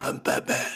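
heavily gravelly whisper. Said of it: "just so gravelly Bale voice".

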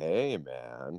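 slow put-on drawl. Recalling a comedian's catchphrase: slow Norm drawl. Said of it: "he would talk really slow like that".

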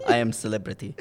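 put-on speaking with an Arabic accent.

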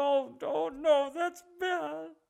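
play-acted tearful blubbering, very drawn-out, slow, high. Imitating a person talking about communism: imitating someone crying.

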